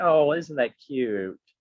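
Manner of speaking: patronizing, snooty, condescending tone. Retelling how a woman came up while the speaker signed autographs, mimicking a condescending tone. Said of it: "Type of like condescending".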